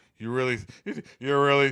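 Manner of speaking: arrogant, self-satisfied voice.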